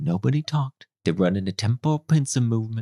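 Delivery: quiet put-on film character voice. Retelling a film scene where a character comes in: quiet Ives impression. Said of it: "Ives comes in real quiet".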